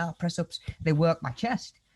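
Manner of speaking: ordinary talk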